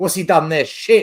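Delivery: loud, crude, sweary outburst. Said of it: "that's how we talk".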